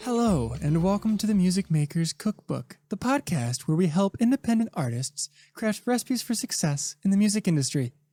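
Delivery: calm, soothing voice. Podcast host opening the show's intro: slightly pitched-up soothing voice. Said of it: "I try to pitch up a little bit".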